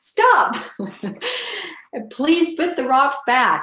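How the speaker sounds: yelled out.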